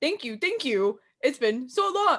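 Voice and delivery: stiff, machine-like, robotic phrasing. Mimicking how the guest just answered your welcome, imitating Amberlynn Bopetti sounding robotic. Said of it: "It's so robotic".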